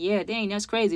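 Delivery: ordinary delivery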